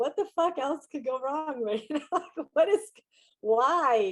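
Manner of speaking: put-on laugh-crying. Retelling a car break-in the night before flying: retelling own laugh-crying. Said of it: "laugh crying at my car".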